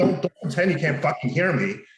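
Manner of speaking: put-on anxious, freaked-out, high, frantic, worked-up tone. Speaker retells confronting a guy while anxious before registration, retelling own freak-out. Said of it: "I'm freaking out".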